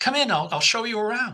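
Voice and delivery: put-on British accent. Retelling how a woman invited him and his family inside: british accent. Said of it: "In a British accent".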